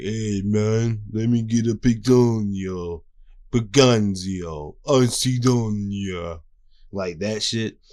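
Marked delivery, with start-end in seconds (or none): 0.0-6.4 slow cartoonish mobster voice. Recalling first watching One Piece years ago, speaker imitates Sanji: 4Kids Sanji mafia voice. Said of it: "the four K Kids Mafia voice".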